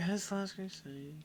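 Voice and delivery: hushed, glum, mournful mopey murmur, very soft. Imitating how the other person says a title: mock-sad, mopey imitation. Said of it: "you sound so sad when you say it. You're like".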